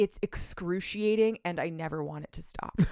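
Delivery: ordinary talk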